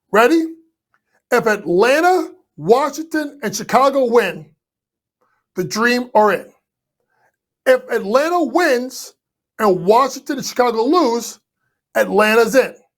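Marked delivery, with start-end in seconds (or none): 1.3-12.7 slow, measured, deliberate step-by-step delivery. Explaining the WNBA eight-seed scenarios to listeners, the speaker is speaking slowly. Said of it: "I'm going to say this slow".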